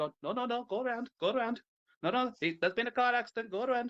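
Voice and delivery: imitated Indian accent. Describing traffic in india, mimicking people at an accident in an indian accent. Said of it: "Please stop doing the accent".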